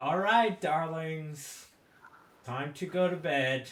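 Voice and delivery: high, loud, eerie, creepy voice through a megaphone. Voicing a familiar figure over a megaphone sending everyone to bed: creepy voice. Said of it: "That's creepy".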